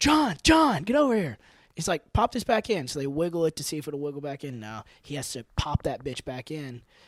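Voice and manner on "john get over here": very high, loud yell. Telling a story, quoting him yelling at the trainer; retelling a yell. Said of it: "And he's yelling at the trainer".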